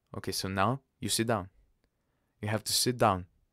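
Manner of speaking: usual speaking voice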